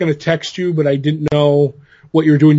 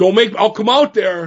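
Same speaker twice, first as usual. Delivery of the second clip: put-on big, tough New York accent, higher, slower; 5 semitones higher than usual. Retelling what a guy at a New York show said, in a big, tough New York accent. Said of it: "with the big, tough New York accent".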